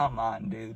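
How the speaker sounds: sheepish, embarrassed groaning complaint. Retelling being caught by mom: imitating own embarrassed groan. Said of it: "I was embarrassed".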